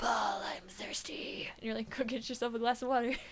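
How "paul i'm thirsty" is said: sultry, seductive, breathy, hushed whisper. Imagining a visitor coming in at night to a friend, the speaker uses a sexy voice. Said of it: "He had a really sexy voice".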